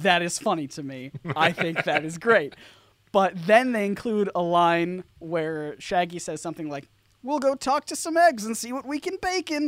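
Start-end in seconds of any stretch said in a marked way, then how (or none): 7.2-9.7 very high squeaky put-on voice, little effort. Quoting a movie line, terrible Shaggy impression. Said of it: "a terrible Shaggy impression".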